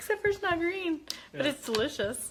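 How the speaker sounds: high voice, laughing while talking. Tasting a drink and talking to viewers, the host is laughing.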